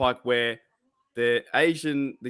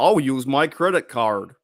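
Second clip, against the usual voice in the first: loud put-on American accent; 5 dB louder than usual. Demonstrating how Americans talk, in an American accent. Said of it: "That's how they talk".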